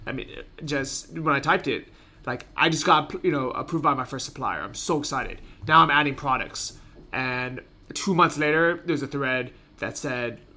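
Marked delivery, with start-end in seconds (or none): none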